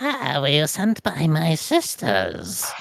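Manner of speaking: strange, weird, witchy creature put-on voice. Game master voicing a Sylvan-speaking figure for the players, in a weird voice. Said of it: "it says in this kind of like weird voice".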